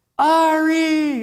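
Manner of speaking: very high, stretched-out, drawn-out yell. Retelling a woman spotting the speaker down a quiet hospital hallway, imitating her yelling. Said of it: "And yells out loud".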